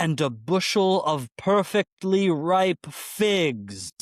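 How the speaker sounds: loud booming character voice. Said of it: "in this loud, booming voice".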